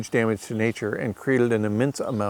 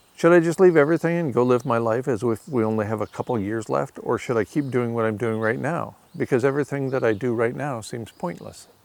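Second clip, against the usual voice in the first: ordinary talk, nothing marked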